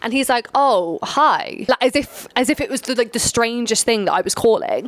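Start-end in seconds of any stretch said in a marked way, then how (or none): 0.5-1.6 put-on robot-like, robotic tone. Retelling a phone call in which the other man answers: imitating a robot-like voice. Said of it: "literally like a robot".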